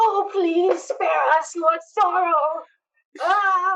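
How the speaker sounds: exaggerated cowering plea. Cowering before a villain to distract foes: exaggerated cowering plea. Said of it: "a very exaggerated manner".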